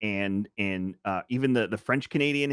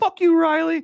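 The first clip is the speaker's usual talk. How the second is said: very high, loud squeaky voice. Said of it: "he has this really high squeaky voice".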